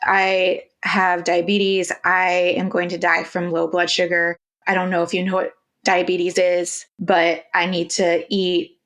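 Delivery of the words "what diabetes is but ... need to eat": ordinary talk, nothing marked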